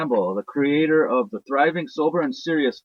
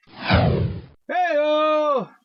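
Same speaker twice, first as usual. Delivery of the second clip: higher-pitched put-on TV announcer voice; 12 semitones higher than usual. Opening a recorded message, doing an Ed McMahon impression. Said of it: "That's my best Ed McMahon impression".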